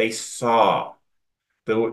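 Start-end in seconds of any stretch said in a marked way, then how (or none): 0.0-0.9 "they SAW" with SAW stressed on a falling tune. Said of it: "I'm emphasizing the word".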